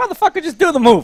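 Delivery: high, loud put-on yell, barked out.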